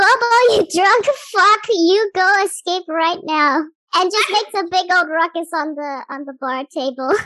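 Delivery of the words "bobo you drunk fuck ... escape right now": high, loud yelling at the top of the lungs. Narrating a game, a character jumps onto the bar table: yelling at the top of lungs. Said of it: "he just yells at the top of his lungs".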